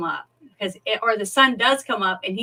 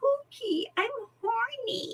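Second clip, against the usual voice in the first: put-on very high, airheaded, ditzy baby talk voice; 14 semitones higher, 7 dB quieter than usual. Quoting an actress's movie line: imitating ditzy baby talk. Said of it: "that ditzy talk".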